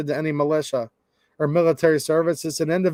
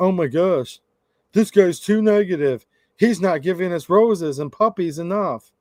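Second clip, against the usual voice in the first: put-on ranting chatter. Reading out a chat message from someone ranting at the speaker: imitating a ranting chatter. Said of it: "I've got one person ranting at me".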